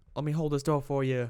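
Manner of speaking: bad put-on Southern accent, pitched high. Speaker acts out polite people from the South, in a bad Southern accent. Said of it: "That's the worst Southern accent".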